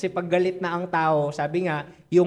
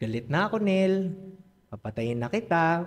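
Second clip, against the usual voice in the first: lilting Ilonggo accent; 3 dB quieter than usual. Showing how Ilonggo people say things, in a sweet, slow Ilonggo lilt. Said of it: "mga Ilonggo daw to eh... Ang lambing pa eh... Dahan-dahan pa eh".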